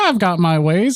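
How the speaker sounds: smug, self-satisfied, pleased-with-himself tone. Narrator voices a character asked how he could see him: smug. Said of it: "he says it really smugly".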